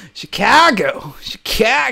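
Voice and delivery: put-on New York accent on the word Chicago. Repeating a city name from chat: imitating a New York accent. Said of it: "I try to imitate, like, a New York accent".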